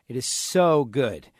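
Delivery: emphasis on so good. Promoting a business with a phone number: emphasis on so good. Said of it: "Notice when I say so good, I put the emphasis".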